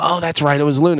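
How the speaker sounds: usual speaking voice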